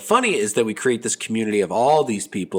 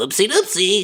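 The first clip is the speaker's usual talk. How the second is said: put-on goofy teen character voice, higher; 9 semitones higher than usual. Acting out a joking commenter: Robin from Stranger Things voice. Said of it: "That's my Robin from Stranger Things impression".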